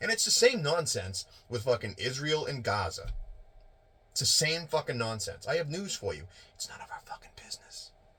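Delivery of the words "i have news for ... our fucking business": breathy, near-whispered delivery, dropping into a whisper. Ranting that foreign wars are not our business: Joe Biden impression. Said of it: "That's my best Joe Biden impression".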